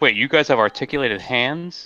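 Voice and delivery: ordinary talk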